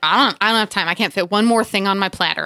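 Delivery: ordinary talk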